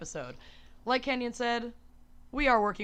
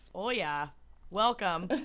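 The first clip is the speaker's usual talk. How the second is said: badly done, fake Minnesotan accent. Podcast host opens the show with two friends, bad Minnesotan accent. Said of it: "unleash their worst Minnesotan accents".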